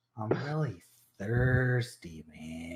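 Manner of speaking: slow, sluggish, slowed-down character voice. Narrating a story and voicing the scion, who has gone really slow: slow sluggish voice. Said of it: "the scion is now like kind of gone really slow".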